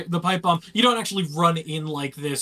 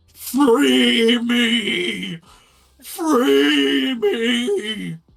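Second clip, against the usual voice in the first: loud, high, shrieking monster scream; 6 semitones higher, 5 dB louder than usual. Narrating a strange creature as the party rushes inside, screaming. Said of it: "opens its maw, and screams".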